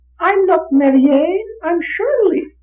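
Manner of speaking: put-on small, very high little-girl voice. Retelling a regression session, the subject answering in a little girl's voice. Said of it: "the little voice says".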